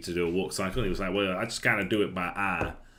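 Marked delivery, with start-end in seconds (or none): 1.1-2.7 put-on Southern US accent, higher and louder. Retelling a tutorial teacher's line: imitating a Southern American accent. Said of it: "a Southern American".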